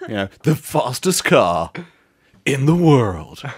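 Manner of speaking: put-on British TV presenter voice. Joking with the other speaker, who asked about an accent, Jeremy Clarkson impression. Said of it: "I think that's my Jeremy Clarkson".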